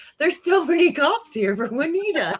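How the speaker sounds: mock giggling through the words, very high voice. Retelling how he couldn't stop laughing as the sheriff pulled up, imitating someone giggling. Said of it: "he's giggling, being like".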